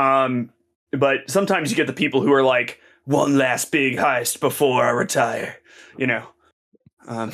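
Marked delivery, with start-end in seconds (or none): 3.0-5.6 put-on slow, older veteran cop voice. Joking about heist movie characters: old cop about to retire voice. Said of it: "did the voice like I was an old cop about to retire".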